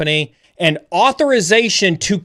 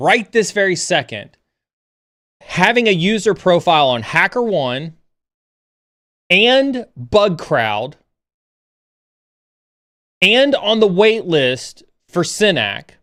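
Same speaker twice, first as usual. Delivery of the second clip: deliberately slow speech. Addressing aspiring pen testers, saying it really slowly for those in the back. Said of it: "I'm going to say this really slowly".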